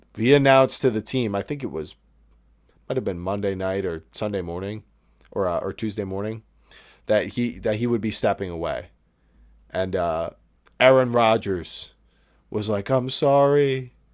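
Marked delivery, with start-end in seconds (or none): 12.9-13.8 tearful voice, pitched higher. Retelling how a player apologized to the team: imitating Aaron Rodgers in tears. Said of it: "in tears".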